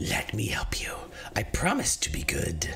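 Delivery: sibilant, hissing, snaky whispered spirit voice. Narrating, the game master voices a spirit whispering in a player's ear, sibilant whisper. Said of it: "A sibilant voice whispers in your ear".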